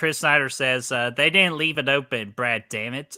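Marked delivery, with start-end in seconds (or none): none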